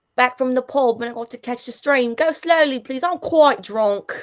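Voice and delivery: everyday London accent throughout. Asked to say her lines again in Londonese; London accent. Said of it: "Can you say that in Londonese?".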